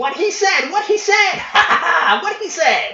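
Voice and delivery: screeching, shrill goblin voice, very high. After the Goliath announces a former captain, the goblin screeches: goblin screech like breaking glass. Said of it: "screeching out in a voice that sounds like breaking glass".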